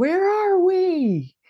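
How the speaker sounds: very loud, very high yell, word we stretched. Retelling how one guy suddenly spoke up, retelling a really loud voice. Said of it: "in a really loud voice".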